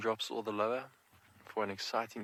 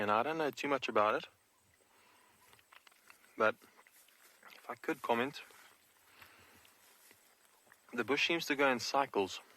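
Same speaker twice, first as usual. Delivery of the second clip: muffled speech through a full mouth while chewing. Answering a listener's question while eating marula, talking with a mouthful. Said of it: "Excuse me while I talk with a mouthful of marula".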